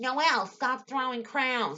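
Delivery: loud, high-pitched yell carried across a room. Recounting a class fight over thrown crowns, the speaker acts out the teacher's yell. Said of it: "the teacher yells".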